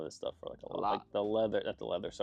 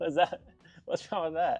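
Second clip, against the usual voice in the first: plain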